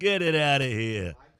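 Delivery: booming, loud put-on New Jersey accent. Speaker repeats their line for Rogers, New Jersey accent. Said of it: "That's my uh, New Jersey accent".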